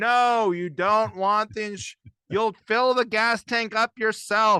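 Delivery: loud, high, drawn-out, frustrated pleading scream. Retelling waiting in a rental car line behind slow customers: imitating own screaming. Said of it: "and I'm just screaming".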